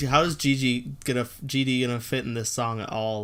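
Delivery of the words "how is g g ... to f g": ordinary delivery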